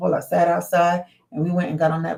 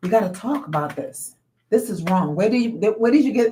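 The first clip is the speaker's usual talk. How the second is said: mock firm, adamant, insistent protest; 3 semitones higher than usual. Retelling the speaker as a child raising a hand in class, retelling adamant insistence. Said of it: "I'm so adamant".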